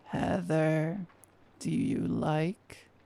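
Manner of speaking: very slow growled, gurgled monster creature voice. Reading a horror story, a broken creature speaks to Heather, growling and gurgling monster voice. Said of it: "as it growled and gurgled".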